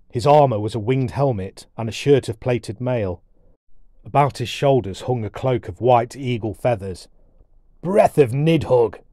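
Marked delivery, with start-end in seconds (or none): 7.9-8.9 loud, booming, roaring dwarf bellow. Shielding his eyes from a lamp, a dwarf protests at the light, bellowing. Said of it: "he bellowed".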